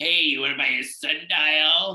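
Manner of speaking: voice of a tiny, scrawny little man. Imagining the little scrawny man from Hercules selling sundials: little scrawny man voice. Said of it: "I could just imagine this little, like, scrawny man".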